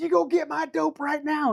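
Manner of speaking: put-on, worked-up, high-pitched agitated yelling. Describing a woman yelling at her boyfriend, retelling a woman yelling. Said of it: "she's yelling at her boyfriend".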